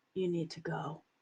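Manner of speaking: low, soft, barely audible half-whisper, close in. Describing a plan to hug him and speak into his ear: half-whispering. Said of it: "just gonna whisper in his ear".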